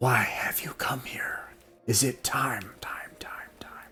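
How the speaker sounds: whispery, echoey, otherworldly ethereal whisper. Speaker retells what a creature says to Warden, in an echoing ethereal voice. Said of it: "in this echoing ethereal voice".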